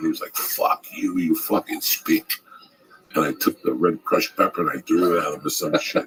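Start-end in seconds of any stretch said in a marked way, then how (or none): 0.3-2.3 put-on slow, swooping Greek accent. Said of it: "he had the accent like".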